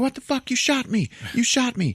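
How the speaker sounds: screaming outburst, voice very high. Recounting a scene where a man just shot by a woman is retelling a man screaming. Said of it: "screaming at her".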